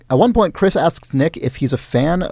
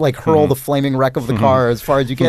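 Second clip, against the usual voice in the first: ordinary delivery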